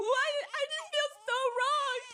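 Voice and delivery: acted wailing, very high and whining. Retelling how a woman started wailing, imitating someone wailing. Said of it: "wailing noises".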